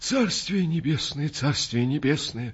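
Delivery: quavering, trembling words mumbled through tears. A man crossing himself after being embraced: trembling, mumbling voice. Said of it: "дрожащим голосом пробормотал он".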